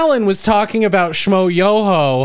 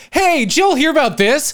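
mocking feigned surprise, much higher pitch; 6 semitones higher than usual. Mocking how late-night talk show hosts act, put on fake surprise. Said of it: "the fake".

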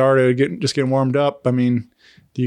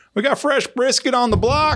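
put-on, very high, hollered shout; 12 semitones higher than usual. Retelling a guy calling out as they walk in: imitating a yell. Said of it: "the guy yells".

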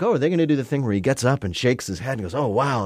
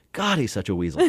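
usual speaking voice

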